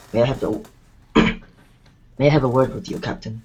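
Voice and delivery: quiet, low theatrical whisper. Voicing a character who asks the captain for a private word: half-whispering in character. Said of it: "whispers to her".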